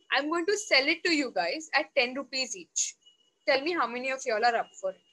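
plain

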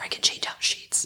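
soft, hushed, barely voiced whisper. A host describing how they prepare for guests, whispering. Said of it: "I'm whispering".

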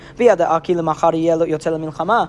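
ordinary talk, nothing marked

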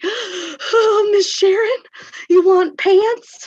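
very high, very loud, drawn-out, upset pleading. Retelling how an upset student came up at recess: imitating an upset student. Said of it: "came up to me kind of upset".

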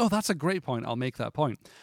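ordinary talk, nothing marked

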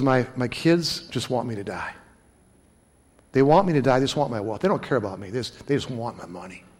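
acted tearful sobbing, low and soft. Retelling what a man said at the speaker's window, imitating someone crying. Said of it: "he's crying in front of me".

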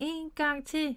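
gleeful, happy, high shout. Narrator reads her line to the one pushing her swing, shouting happily. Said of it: "råbte hun glad".

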